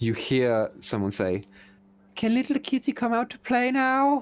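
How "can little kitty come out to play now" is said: put-on very high, weird, shocking young woman's voice. Narrator voices a woman heard from above, strange young woman's voice. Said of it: "a woman's voice, maybe like around twenty-ish".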